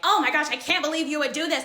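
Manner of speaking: put-on indignant, disbelieving screaming outcry. Retelling a friend's blow-up: imitating a friend screaming. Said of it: "She is yelling, screaming at me like".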